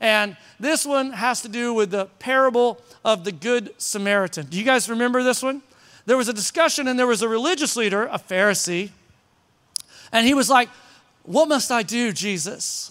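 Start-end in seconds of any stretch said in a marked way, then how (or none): 11.2-12.9 put-on slow, haughty, snooty voice. Retelling the Good Samaritan parable, voicing a Pharisee asking Jesus: put-on snobby voice. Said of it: "I always have to talk in like my snobby voice".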